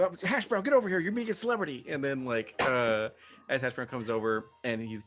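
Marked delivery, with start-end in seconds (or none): 0.0-1.9 starstruck freak-out, high-pitched and rushed, panicky. Playing a character who freaks out over meeting a celebrity: in-character freaking out. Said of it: "freaks out a little bit".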